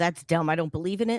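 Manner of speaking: put-on sarcastic tone. Imitating a stranger asked if they are Aquarius: imitating a sarcastic reply. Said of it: "something very, uh, sarcastic and go".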